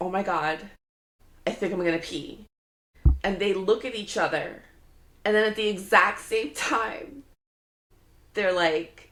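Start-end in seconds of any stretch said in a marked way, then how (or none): none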